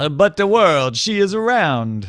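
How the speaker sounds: put-on halting, shaky Italian accent, loud and very slow. Playing Columbus insisting the world is round: attempted Italian accent. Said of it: "pretty sure that wasn't an I-, an Italian accent".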